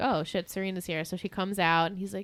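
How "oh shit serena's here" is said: ordinary delivery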